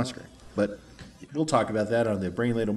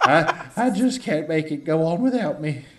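goofy put-on southern robot voice, higher pitch; 6 semitones higher, 5 dB louder than usual. Speakers recall a dented movie robot voiced by a southern man; imitating it. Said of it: "And he talked like this".

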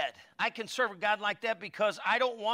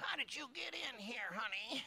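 hushed, very soft, very quiet church lady voice; 3 semitones higher, 14 dB quieter than usual. Retelling what the praying church lady might say in heaven: imitating the church lady. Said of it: "She still talks like that to this day".

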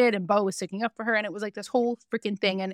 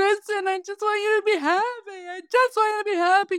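very high, overdramatic, put-on sobbing, fake crying; 11 semitones higher than usual. Imitating someone's performed crying apology: imitating Sandoval fake crying. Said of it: "I love your Sandoval impressions, especially the ones where he's crying".

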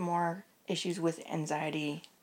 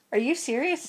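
high, incredulous, disbelieving little tone; 9 semitones higher, 5 dB louder than usual. Retelling how everybody reacts to the fear of buses: imitating people's incredulous tone. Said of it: "everybody has this little tone like".

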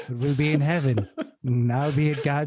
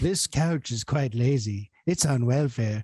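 put-on soothing, kindly grandpa-style old man voice; 2 semitones lower than usual. Walking around the house doing a silly bit: Reagan impression. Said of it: "I love doing Reagan".

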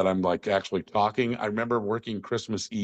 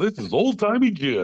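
put-on old-timey radio announcer voice, pitched up; 7 semitones higher, 4 dB louder than usual. Recalling a bit done to make a coworker laugh, talk like an old radio announcer. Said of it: "I would talk like an old radio announcer".

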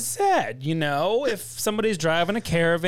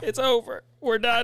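mock tearful blubbering, crying and sobbing voice; 4 semitones higher than usual. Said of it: "quick turn to start crying".

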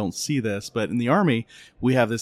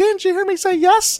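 put-on tiny, very high three-year-old little-girl voice; 8 dB louder than usual. A father retells what a 3-year-old girl said in the car, in a little girl voice. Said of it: "I hear this 3-year-old little girl voice say".

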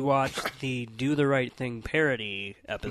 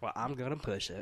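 fake, put-on Southern accent with drawl; 10 dB quieter than usual. Joking with co-hosts on a podcast: put-on southern accent. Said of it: "Why did you have a southern accent".

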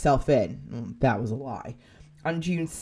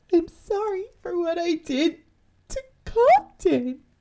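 very high, barely coherent, whimpering voice; 14 semitones higher than usual. Retelling a killer's fourth call, imitating a whimpering, barely coherent voice. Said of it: "in a whimpering, barely coherent voice".

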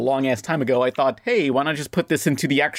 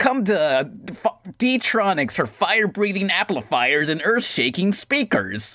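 radio commercial announcer impression, higher; 5 semitones higher than usual. Imitating the one announcer heard on every radio commercial: radio commercial announcer voice. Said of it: "the one voice for every commercial".

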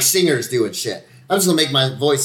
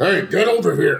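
mean tough-guy voice, pitched up, dubbed movie sound; 5 semitones higher than usual. Describing how a friend's scenes were dubbed over, the speaker imitates it: mean guy voice. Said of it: "They put in this like mean guy voice".

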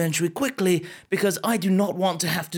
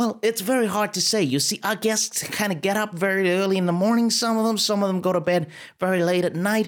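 put-on trying an American accent. Playing a hotel receptionist questioned about missing underwear, the speaker answers in an attempted American accent. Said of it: "I'm the receptionist of this hotel. ... and I noticed that you almost have an American accent. Yeah, that's right, honey. I'll be honest with you. This is absolutely the best attempt at an American accent you are going to get on this podcast today".

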